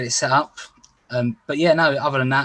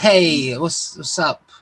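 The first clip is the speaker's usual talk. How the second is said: very slow, fake laid-back cool guy voice; 3 semitones higher than usual. Repeating the greeting to show a cool guy voice: put-on cool guy voice. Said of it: "'cause I'm cool".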